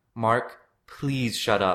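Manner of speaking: begging, imploring, pleading tone. The narrator pleads with Mark while Mark and Paul threaten each other: pleading. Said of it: "I pled".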